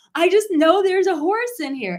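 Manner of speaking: loud, high-pitched screaming. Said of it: "he starts screaming".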